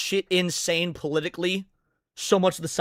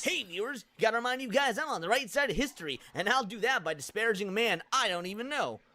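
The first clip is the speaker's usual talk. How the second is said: very quiet, hushed cartoon hedgehog voice; 3 semitones higher, 11 dB quieter than usual. Mimicking someone addressing viewers, the speaker does a Sonic voice impression. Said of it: "That is actually a good voice impression for Sonic".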